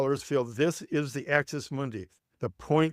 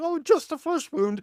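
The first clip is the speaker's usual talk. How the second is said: voice popped into falsetto; 14 semitones higher than usual. Quoting a famous line while discussing the Iliad, John Cleese falsetto. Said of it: "done in a falsetto".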